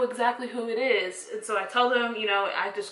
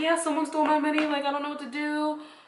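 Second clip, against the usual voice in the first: mock weepy, upset, high crying voice; 5 semitones higher than usual. Retelling telling the other on the phone, crying: imitating own past crying. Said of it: "crying and everything".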